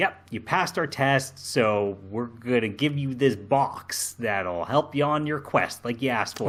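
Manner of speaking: ordinary delivery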